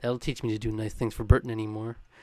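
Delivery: half-swallowed grumble under the breath. Quoting a favorite tantrum scene from the season, mumbling as Milton.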